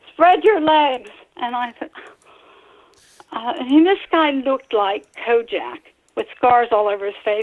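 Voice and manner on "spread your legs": high-pitched screaming. Retelling what the officer screamed during a search: imitating an officer screaming. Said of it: "he screamed at me".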